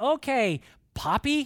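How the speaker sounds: high, loud, edgy sarcastic delivery. Retelling a granddaughter's phone remark: imitating Kinley's sarcasm. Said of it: "she has this sarcasm".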